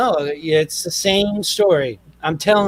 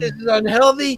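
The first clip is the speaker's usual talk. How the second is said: put-on yelling, higher; 5 semitones higher than usual. Retelling how dad sat the kids down: imitating dad yelling. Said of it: "yelled at us".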